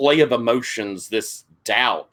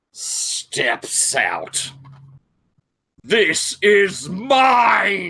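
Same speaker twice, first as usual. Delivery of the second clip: very high, loud dragon voice, "mine" drawn out; 9 semitones higher than usual. Narrator voicing the stained-glass dragon as it steps out of the window. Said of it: "And that dragon made of stained glass, all planes, more like an origami sort of shape in the stained glass, / And that dragon made of stained glass, all planes, more like an origami sort of shape in t".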